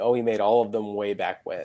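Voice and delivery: ordinary talk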